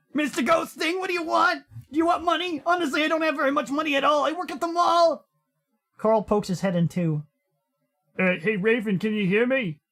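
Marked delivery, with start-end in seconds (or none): 0.2-5.3 very high-pitched babbling ramble. Narrating a story, the bound Raven pleads with the ghost: babbling. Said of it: "[name] presses a hand to the husky's mouth, / [name] starts writhing around in his bonds. / But [name] keeps babbling on about his job".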